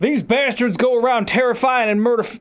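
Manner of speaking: put-on over-the-top Southern accent. Quoting a man whose voice she can't do, in an overdone southern accent. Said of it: "It's so southern because he has".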